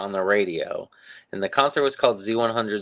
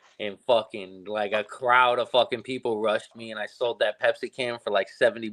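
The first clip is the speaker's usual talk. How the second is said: normal talking voice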